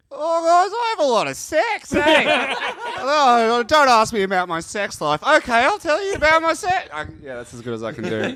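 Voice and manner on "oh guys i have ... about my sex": very high, loud put-on caricature voice. Doing an impression on request of Andrew Hastings. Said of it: "Can you do an impression of, uh, Andrew Hastings?".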